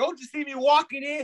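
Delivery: put-on New York accent. Showing off a best attempt at a new york traffic accent. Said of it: "my best uh, New York traffic accent".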